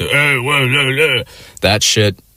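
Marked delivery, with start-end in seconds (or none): 0.1-1.2 raspy, pitched-up put-on toad croak. Describing an old man at a bar, imitating a raspy toad voice. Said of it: "the sort of like raspy toad voice".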